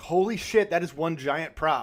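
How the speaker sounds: ordinary talk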